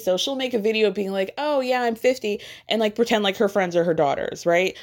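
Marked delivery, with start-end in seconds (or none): 1.4-2.4 put-on dry, joking sarcastic voice. Retelling an influencer's joke video: imitating Taylor Frankie Paul's sarcasm. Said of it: "very sarcastic, jokey content".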